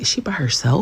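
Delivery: hushed, nosy, gossipy half-whisper. Retelling what an older couple half-whispered at a nearby table: imitating someone half-whispering.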